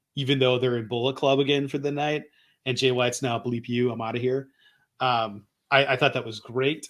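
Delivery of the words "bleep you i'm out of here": ordinary talk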